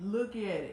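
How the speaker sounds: playful, joking put-on copy of a voice. Retelling what the other speaker told them, imitating that speaker's voice. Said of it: "I'm only doing your voice".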